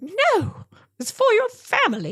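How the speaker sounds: very high, sing-song, swooping put-on British accent. Retelling what a man said when handing over a rock, put-on British accent. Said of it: "he has a British accent instead of a South African one".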